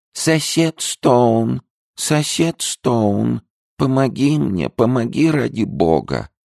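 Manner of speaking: squeaky, terribly thin, small, high voice. A tiny creature from a wallet begs its neighbour Stone for help, quiet, thin squeaky voice. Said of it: "тихим писклявым голосом, тонким ужасно".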